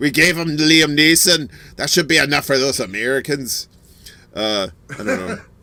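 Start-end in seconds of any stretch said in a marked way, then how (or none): 0.0-3.7 bad put-on Irish accent falling apart. Joking as if ireland were speaking about exporting a famous actor: bad put-on irish accent. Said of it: "my Irish accent goes to shit".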